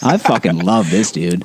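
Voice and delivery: ordinary talk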